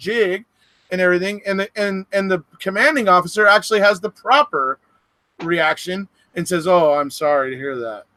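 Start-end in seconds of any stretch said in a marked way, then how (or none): 6.7-8.0 play-acted grave, very solemn, low tone. Retelling how the commanding officer answered Hoffer, retelling a solemn reply. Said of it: "Says it very solemnly, just like that".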